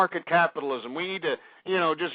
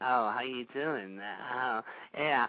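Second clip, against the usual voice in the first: very quiet, low, hushed wimpy put-on voice; 6 semitones lower, 9 dB quieter than usual. Ranting at a man he calls sir, mocking how he sounds, mocking a sissy-sounding voice. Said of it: "the reason why you can sound like".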